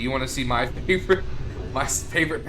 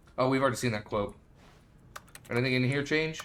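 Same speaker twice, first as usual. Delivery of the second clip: speech muffled by a mouthful of food; 4 dB quieter than usual. Looking through items while eating a Star Crunch, talking while eating. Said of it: "Sorry, I'm eating".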